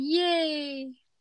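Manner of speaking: sarcastic, insincere, drawn-out enthusiastic cheer. Repeating an earlier cheer to explain it: retelling own sarcastic yay. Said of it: "I was frowning and saying".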